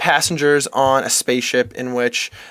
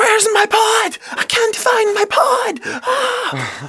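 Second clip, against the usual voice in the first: mock overacted panic, very high and very slow. Mocking an overacted freak-out scene in a movie: imitating Jennifer Lawrence freaking out. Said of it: "is freaking out and she's like".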